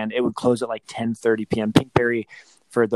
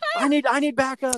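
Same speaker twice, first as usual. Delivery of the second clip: mock yelling, higher. Retelling getting the kid into the car, calling to the wife: imitating own yelling. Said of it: "I'm yelling to my wife".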